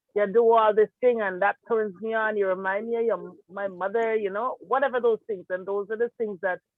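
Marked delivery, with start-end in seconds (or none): none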